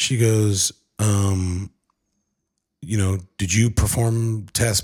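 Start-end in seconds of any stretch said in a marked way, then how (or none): 3.4-4.8 put-on formal official tone. Retelling a doctor's phone call: imitating the doctor's official tone. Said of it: "she's reading me all these official stuff".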